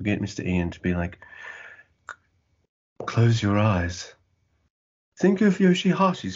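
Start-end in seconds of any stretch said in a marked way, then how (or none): 2.1-6.4 put-on British accent, spoken evenly. Imitating Ian reading a script for word paintings: Ian's soft-spoken British accent. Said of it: "that really kind of soft-spoken British accent".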